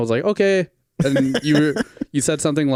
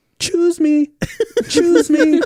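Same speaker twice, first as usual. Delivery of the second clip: put-on, very high-pitched holler; 4 dB louder than usual. Retelling how mom yelled out the car window for directions, imitating mom yelling. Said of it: "she just yells out the window".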